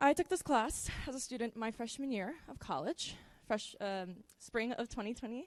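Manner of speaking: anxious, unsure, halting delivery. Telling the audience about taking this class as a student, nervous. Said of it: "Sorry, I'm nervous".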